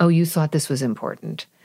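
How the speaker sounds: ordinary talk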